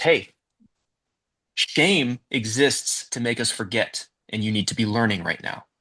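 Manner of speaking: ordinary delivery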